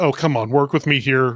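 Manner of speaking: plain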